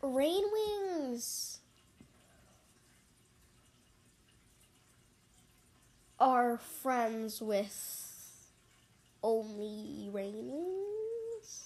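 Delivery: a touch of dry sarcasm, slow and drawn out. Talking about the Rain Wing tribe on a podcast: a little sarcastic. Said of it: "I'm adding a little sarcasm to this".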